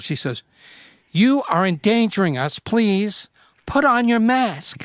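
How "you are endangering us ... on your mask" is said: piercing, deliberate, shrill and drawn out. Retelling a woman's demand in an elevator: imitating a shrill voice. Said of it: "she comes shrill".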